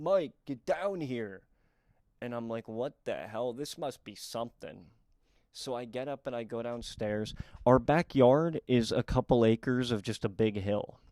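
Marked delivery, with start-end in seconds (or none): 0.0-1.4 dry, droll delivery. Telling a story, the speaker retells dad yelling up from downstairs: retelling dad's yell. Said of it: "He yells up from downstairs".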